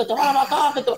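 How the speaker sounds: put-on shouting. Recounting how parents shouted at their children, imitating parents shouting. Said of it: "Y iban los padres chillando".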